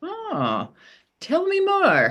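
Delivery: high, eager, intrigued tone.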